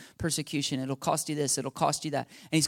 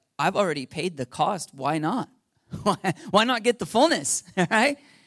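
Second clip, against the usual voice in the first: loud, swooping, put-on sarcastic laughter running through the words; 4 semitones higher, 5 dB louder than usual. Acting out your own past reaction before turning to your wife, retelling a cynical, sarcastic laugh. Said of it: "sarcastically laughing".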